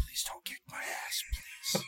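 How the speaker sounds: hushed whisper, under the breath. Acting out a line to a guy in the scene, whispering. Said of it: "like, whisper".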